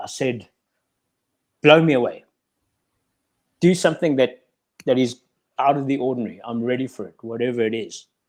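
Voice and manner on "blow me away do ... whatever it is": mock impish, cheeky, teasing, daring tone. Retelling own past prayer to God, retelling a cheeky prayer. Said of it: "sort of like a cheeky way".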